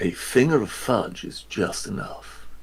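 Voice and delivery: sultry, put-on British accent. Taking a turn at fake accents, in a sultry fake british accent. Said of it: "that kind of sultry summer tone".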